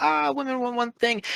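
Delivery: very high, scornful, mocking parody voice. Retelling how the other speaker described someone's beliefs: imitating a mocking tone. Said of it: "You say it mockingly".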